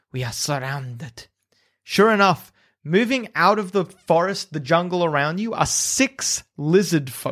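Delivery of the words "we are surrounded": low hiss, almost under the breath. Game master voices Flask of Wine warning the group, hissing low, almost to himself. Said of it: "hisses and says, low, almost to himself".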